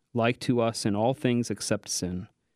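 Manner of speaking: ordinary talk, nothing marked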